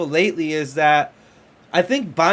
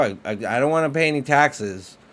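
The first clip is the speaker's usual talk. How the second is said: ordinary talk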